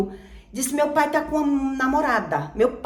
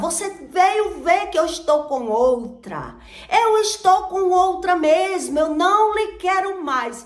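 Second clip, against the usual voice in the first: high, light, mild put-on shout; 5 semitones higher than usual. Retelling what the man shouted in front of the other woman: imitating him shouting. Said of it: "Ele começou a gritar".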